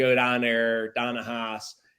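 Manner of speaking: put-on Pittsburgh accent. Recalling the speaker's old speech before a teacher corrected it, really bad Pittsburgh accent. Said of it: "I talked like this a lot of times".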